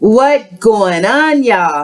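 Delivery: very bad put-on Jamaican accent. A tarot YouTuber greeting her viewers, in her worst Jamaican accent. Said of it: "That's my worst Jamaican accent ever".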